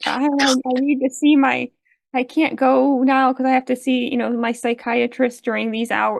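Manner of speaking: fake, high old lady voice, stumbling. Describing a man at his trial, quoting him in a put-on old lady voice. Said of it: "put on the sort of old lady voice of".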